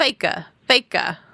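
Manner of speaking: put-on Massachusetts accent. Retelling a woman who kept calling people fakers, imitating a Massachusetts accent. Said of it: "She sounded so Massachusetts".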